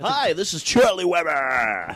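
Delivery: put-on slow, high radio announcer voice. Introducing themself, the speaker puts on a radio announcer voice. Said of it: "I'm gonna do a radio voice for this".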